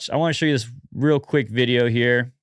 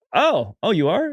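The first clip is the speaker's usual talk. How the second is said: high, drawn-out shocked disbelief, pitch rising on "oh"; 6 semitones higher than usual. Replaying a clip, the speaker acts out someone's shocked disbelief at an answer. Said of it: "the pitch change on the O".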